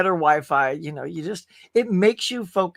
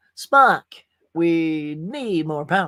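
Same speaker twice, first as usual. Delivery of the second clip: every word dragged out slowly. Turning on the air conditioner, playing at ship's power: Captain Kirk voice. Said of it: "I'm gonna be like, uh, Captain Kirk".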